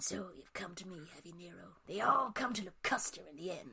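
put-on very quiet, weathered, wizened frontier old-timer voice. Imagining Locusta in jail greeting Nero: Locusta as old Western man. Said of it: "an old, wizened kind of man of the West there, going".

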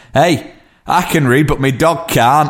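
high, put-on, classic Yorkshire lad's accent. Retelling a cricket club lad's reply about dogs on the field: imitating a yorkshire accent. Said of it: "classic Yorkshire".

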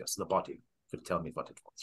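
put-on German accent in English. Retelling what another person said about her philosophy: imitating someone with a German accent. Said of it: "she says it with a German accent".

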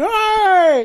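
high, loud yell. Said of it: "after I yelled".

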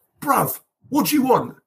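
very high, loud, yelled-out shout. Retelling how the man with him shouted out among Welsh fans, retelling a shout. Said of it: "he shouts out".

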